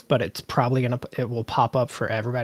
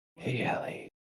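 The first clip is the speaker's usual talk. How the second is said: soft, voiceless, breathed-out whisper. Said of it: "You just go".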